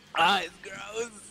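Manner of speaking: high, sore, burning-throat voice. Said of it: "I'm sorry, my voice".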